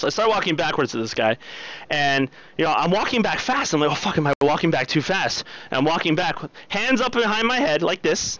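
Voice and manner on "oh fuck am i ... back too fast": ordinary talk, nothing marked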